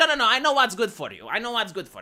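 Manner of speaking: normal talking voice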